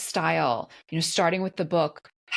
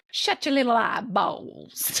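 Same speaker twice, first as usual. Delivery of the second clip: high, pitched-up cartoon vulture voice; 6 semitones higher than usual. Recalling a movie scene, the speaker quotes Robin disguised as a vulture guard: Nutsy vulture voice. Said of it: "And that voice".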